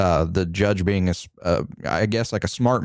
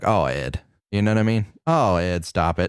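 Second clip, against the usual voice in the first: mocking dismissive tone. Retelling how cops brushed off a confession: imitating dismissive cops. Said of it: "they were just like".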